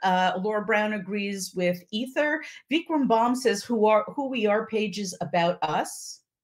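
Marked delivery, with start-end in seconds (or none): none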